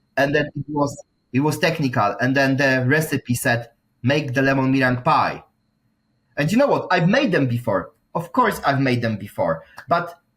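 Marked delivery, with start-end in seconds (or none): none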